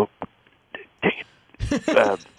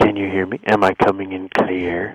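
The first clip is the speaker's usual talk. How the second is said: hushed, breathy speech. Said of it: "Why do you sound so breathy?".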